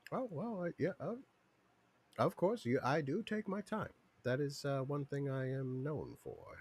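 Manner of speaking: openly proud, boastful tone. Voicing a merchant in the game who admits he is slow: said proudly. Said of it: "proudly sa-, says that and kinda puffs his chest out".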